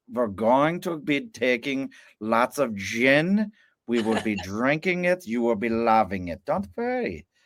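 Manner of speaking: exaggerated, slow German accent, "gin" stretched. Explaining what you need to do: an over-the-top German accent. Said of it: "put on that really over the top German accent".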